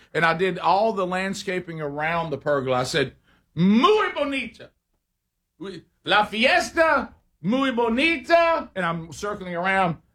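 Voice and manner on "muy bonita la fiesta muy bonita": over-the-top shouting, very high and very slow. Retelling showing off the landscaping around the pergola: shouting like Matt Foley. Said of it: "almost like Matt Foley".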